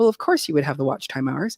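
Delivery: ordinary talk, nothing marked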